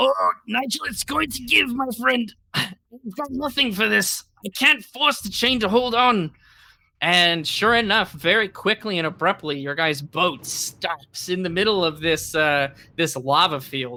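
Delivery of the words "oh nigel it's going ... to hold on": high, urgent shouted yell. Voicing a character straining to hold a chain: yelling as Stumpy. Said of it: "Stumpy kinda yells out".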